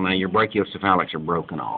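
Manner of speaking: plain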